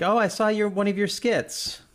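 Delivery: high, dismissive, condescending voice. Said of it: "something that a dismissive parent says".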